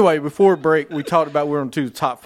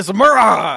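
aggressive, angry raised shout, pitched up, screaming; 5 semitones higher, 6 dB louder than usual. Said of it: "You gotta put aggression behind it".

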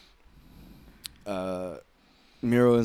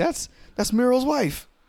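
high, loud, excited voice. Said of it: "And they're like".

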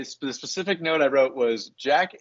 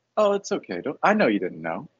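mock-sincere, not sarcastic tone; 2 semitones lower than usual. Retelling what Jack says to Charlie when the medical bag opens, imitating sincere, not sarcastic. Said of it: "not even like sarcastic".

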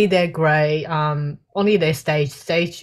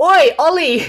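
put-on very high, loud shout with Australian accent; 12 semitones higher, 6 dB louder than usual. Retelling a child calling to a classmate: imitating a shout, Aussie way. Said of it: "shouted at that boy saying".

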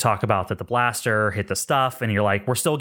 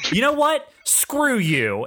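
very high, swooping, fed-up, dismissive tone; 12 semitones higher than usual. Voicing an angered caller about to hang up: pissed-off hang-up. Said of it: "You successfully piss him off".

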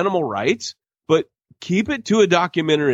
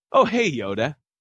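mocking, wooden, flat, poorly delivered line. Mocking a poorly delivered movie line, imitating flat line delivery. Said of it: "he turns around like".

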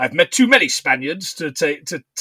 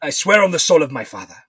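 put-on Spanish accent. Speak the vow of the man you are reenacting, as an Inigo Montoya impression. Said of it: "My impression of Inigo Montoya".

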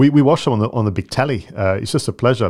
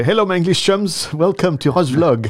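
put-on very thick French accent, pitched up; 8 semitones higher than usual. Dub a welcome to Roger Vlog as Antoine de Caunes, very thick French accent. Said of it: "have a very thick French accent".

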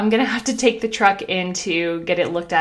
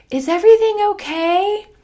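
high, loud call from a distance. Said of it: "And then she yells".

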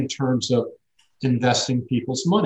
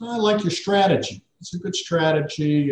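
mock haughty, smug, condescending, talking-down tone; 4 semitones higher than usual. Retelling what the head of the office said after the pitch: imitating a condescending tone. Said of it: "kinda looks down his nose at me".

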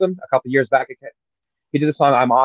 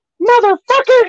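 shrill, loud, high, worked-up outburst; 5 dB louder than usual. Echoing an impression of a podcast host: imitating Jim Cornette getting worked up. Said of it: "He gets all fucking worked up".

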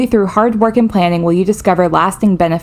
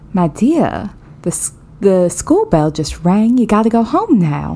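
put-on elderly Southern Georgia grandma accent. Speaker asked to show their one accent, as an old southern grandma. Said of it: "It is an old Southern grandma".

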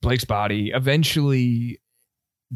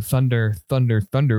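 usual speaking voice

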